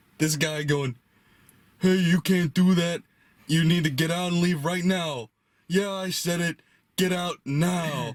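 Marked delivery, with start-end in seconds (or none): 1.8-8.2 put-on high-pitched yelling. Retelling a movie scene where a boss yells at an actor: imitating a boss yelling. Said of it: "he's getting yelled at by his boss".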